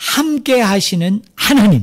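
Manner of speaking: deliberate, forceful heavy stress on "하나님". Reading a phrase aloud to show where emphasis lies: strong stress on 하나님. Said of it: "제가 일부러 세게 읽었어요".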